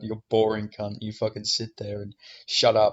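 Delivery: ordinary delivery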